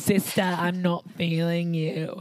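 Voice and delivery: put-on, best-attempt Australian accent. Quoting a queen's remark in the workroom: Australian accent impression. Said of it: "That's my best accent".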